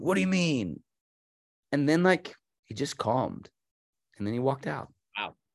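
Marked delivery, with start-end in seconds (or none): 0.0-0.8 mock confrontational, aggressive, high-pitched tone. Retelling a guy's reply to Tom's gentle remark, mimicking an aggressive man. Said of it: "the guy got really aggressive and was like".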